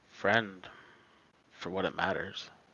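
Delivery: dejected, defeated, depressed, downcast delivery. Voicing a figure answering whether friend or foe: depressed tone.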